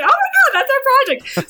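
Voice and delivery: very high, loud, swooping, thrilled excited shriek. Recalling spotting the project from a taxiing plane, retelling an excited scream. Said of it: "I was screaming like".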